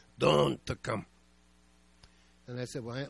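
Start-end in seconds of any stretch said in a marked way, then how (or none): 0.0-1.0 put-on Russian accent. Retelling what Aunt Lizzie said to the speaker, doing Aunt Lizzie's Russian voice. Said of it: "in that Russian voice".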